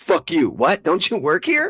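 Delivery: rude, high, swooping, brushing-off tone. Acting out a shop visit, playing the rude staff: imitating rude Supreme store staff. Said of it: "That's my impression of being in Supreme".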